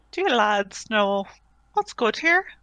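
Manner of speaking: very sweet, sugary tone. A player's character walks over with a menu to a table, in the sweetest voice possible. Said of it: "in the sweetest voice I can muster".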